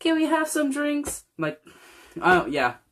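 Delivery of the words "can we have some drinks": put-on very high-pitched, tiny little-child voice. Speaker retelling asking the waitress for sodas, in a little kid voice. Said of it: "like our little voices".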